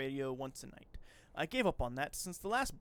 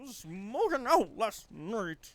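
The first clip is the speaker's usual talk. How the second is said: put-on loud, unconvincing attempted old-man voice; 4 semitones higher, 5 dB louder than usual. Speakers take turns saying a line in a failed old man voice. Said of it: "how am I unable to do an old man?".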